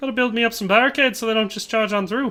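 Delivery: bad fake Irish accent. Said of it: "That was bad".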